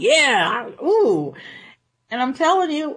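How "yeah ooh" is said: put-on eager, thrilled outburst, drawn-out yeah. Retelling Peter jumping out of the boat on his way to Jesus, acting out Peter's excitement. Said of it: "Now he's excited".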